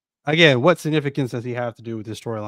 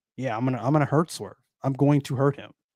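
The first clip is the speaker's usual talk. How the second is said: put-on calm voice, faster pace. Explaining why a calm approach works for Bobby, imitating Bobby's calm delivery. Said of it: "him being like so calm and collected".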